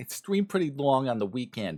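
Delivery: bad put-on New York accent. Streamer welcoming viewers back repeats his own sentence in a terrible New York accent. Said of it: "that was a terrible accent".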